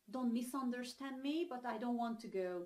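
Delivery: normal talking voice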